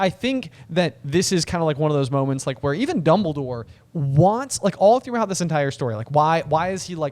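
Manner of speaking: ordinary talk, nothing marked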